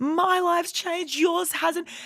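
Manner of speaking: high, slow, furious. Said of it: "just furious".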